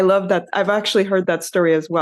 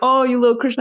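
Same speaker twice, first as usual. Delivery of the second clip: high, taunting, derisive mocking tone; 6 semitones higher than usual. Retelling how a man kept saying Krishna's name to devotees, retelling a mocking tone. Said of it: "saying Krishna's name in a very mocking tone".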